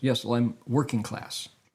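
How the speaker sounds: usual speaking voice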